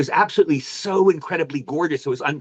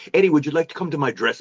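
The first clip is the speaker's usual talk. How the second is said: put-on British accent. Retelling Maxwell Caulfield knocking on his dressing room on set: Maxwell Caulfield British accent. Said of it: "Does a British accent".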